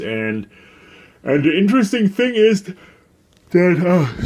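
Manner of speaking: high, stretched speech through a yawn. Explaining what he is writing down, while yawning. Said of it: "sorry for yawning".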